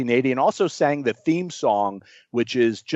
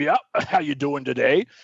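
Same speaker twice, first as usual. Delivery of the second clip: put-on gruff but grandfatherly old man voice; 2 semitones higher than usual. Retelling a phone call with an eighty-year-old man: gruff grandfatherly voice. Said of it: "He was very gruff".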